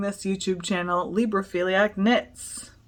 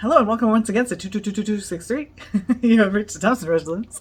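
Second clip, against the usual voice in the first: put-on very fast talking, louder; 4 dB louder than usual. Retelling a dad's answering machine message: imitating dad talking really fast. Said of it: "He just talked really fast".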